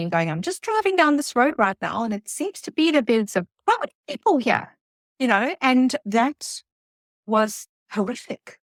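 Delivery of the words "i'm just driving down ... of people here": high, forced calm, light tone. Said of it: "phoning my husband quite calmly".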